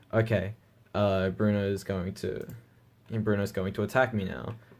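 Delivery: plain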